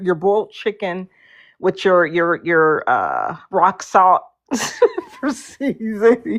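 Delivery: words broken up by laughing. Joking about what the other side will get, laughing while talking. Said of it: "can't even say it without laughing".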